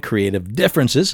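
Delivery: ordinary talk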